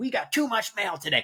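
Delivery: very high, furious, angry shouted griping. Re-enacting a favorite line from a performance, yelling like Richard Kind. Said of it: "the way that he like yells".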